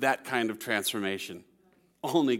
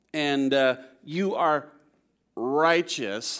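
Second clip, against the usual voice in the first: heavy, thick, sarcastic jab. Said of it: "He's sarcastically saying to these Pharisees".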